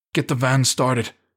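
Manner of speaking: huffy. Reading a story, Ethan speaks from behind the others: huffed. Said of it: "Ethan huffed from behind them".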